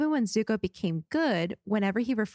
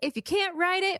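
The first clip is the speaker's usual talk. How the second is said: lively, punched-up, energetic delivery, pitched higher; 9 semitones higher than usual. Redoing the line for Greg, with more energy. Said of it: "Let me do that with more energy".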